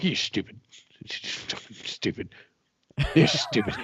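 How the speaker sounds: slow, grouchy, put-on grumbling voice. Acting out reading an article in bed later: put-on grumbling. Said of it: "I'll just be over there grumbling".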